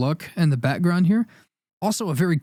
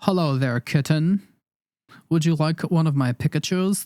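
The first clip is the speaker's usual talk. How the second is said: smooth, put-on flirty tone. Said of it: "the modern day would be like".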